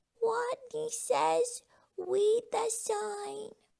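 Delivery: high, squeaking voice. Reading a story, the tiny leader of the game speaks to the players, squeaking. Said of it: "and squeaked".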